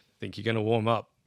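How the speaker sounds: ordinary talk, nothing marked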